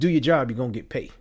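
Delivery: put-on Southern accent. Retelling what granddad said about a painting job: imitating granddad's southern accent. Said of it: "don't mind the Southern accent".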